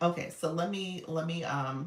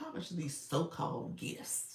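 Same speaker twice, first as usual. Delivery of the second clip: mock doubtful, breathy, half-whispered skeptical scoff; 6 dB quieter than usual. Reading a viewer's comment aloud, imitating a doubtful tone. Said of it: "sounded like you said it just like that".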